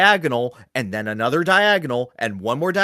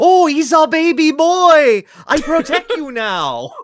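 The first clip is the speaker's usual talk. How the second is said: put-on thick Spanish accent, high and drawn out; 7 dB louder than usual. Quoting a game character to another speaker: Sancho voice with thick Spanish accent. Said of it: "he has a thick Spanish accent".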